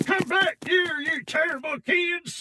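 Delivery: very high, put-on shouting policeman yell. Throwing a trick voice to scare kids off a nut: thrown trick voice, a cop shouting. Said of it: "time to throw one of my trick voices".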